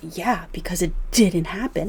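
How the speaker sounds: plain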